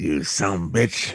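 very low, hushed words through teeth. Showing how a man talks, imitating talking through teeth. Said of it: "when he speaks he speaks with his teeth".

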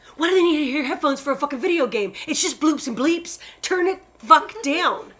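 angry ranting voice. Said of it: "She's so angry".

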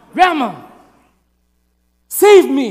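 mad, furious scream, very loud and swooping. Retelling calling to a half-deaf grandma while a man threatened them, retelling a mad, angry scream. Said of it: "so I screamed out in Vietnamese, but I screamed it like in a mad, angry voice".

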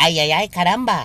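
put-on child voice with a Mexican accent. Showing how a child in mexico would talk, put-on child voice. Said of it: "se é uma criança, ele vai falar".

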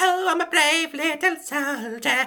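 put-on very high, eerie, creepy baby voice. Mocking the kids being told to sign up for war, in a creepy baby voice. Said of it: "their creepy baby voices".

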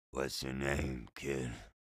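put-on hoarse, raspy voice with slurred speech. Narrator reads an unshaven man asking a kid his name, raspy, slurred voice. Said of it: "He spoke with a raspy, slurred voice".

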